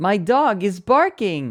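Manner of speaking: high, slow synthetic text-to-speech voice. Speaker tries to recreate how a phrase sounded, in the TikTok text-to-speech voice. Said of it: "it almost sounded like the TikTok voice".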